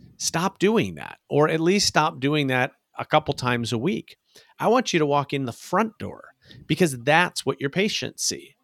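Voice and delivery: ordinary talk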